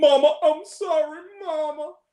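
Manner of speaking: very bad put-on Southern accent, high, slow, sincere. Speaker imitating a movie's lead actor, in a bad Southern accent like Ricky Bobby. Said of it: "he has a very bad Southern accent".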